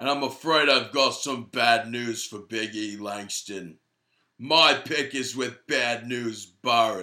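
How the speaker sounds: wrestling ring-announcer catchphrase voice. Announcing a match pick: Bad News Barrett impression. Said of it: "I thought yours was pretty good".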